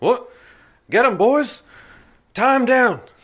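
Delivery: high-pitched loud character voice. Voicing an attacker ordering his boys to tie someone down: Huberk character voice. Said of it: "you hear the voice of Huberk".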